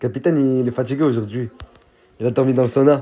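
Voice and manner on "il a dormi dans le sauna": normal talking voice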